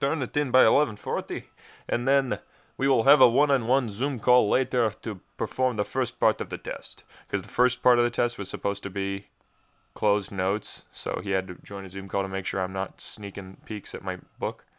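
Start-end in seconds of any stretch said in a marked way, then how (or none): 0.0-7.0 poor, put-on Russian accent. Speaker quotes the Russian man setting their test deadline, in a bad Russian accent. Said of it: "That was not a very good Russian accent".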